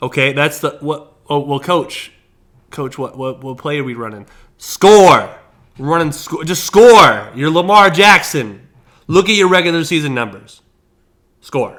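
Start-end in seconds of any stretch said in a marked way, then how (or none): 2.7-11.8 very loud shouting. Speaker acts out talking with a coach and a player, yelling. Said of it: "I feel like I'm yelling".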